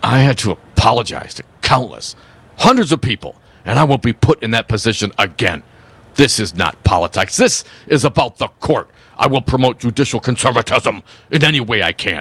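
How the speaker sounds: grand, puffed-up, pompous, self-important delivery. Deliver a quote from Kelly on request so it resembles him, in a pompous Dan Kelly voice. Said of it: "Do it in your most pompous voice".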